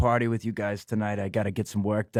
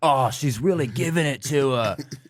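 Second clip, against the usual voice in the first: put-on English-sounding accent; 4 semitones higher than usual. Retelling what he kept saying while they all watched: English-sounding put-on accent. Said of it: "that sounded English".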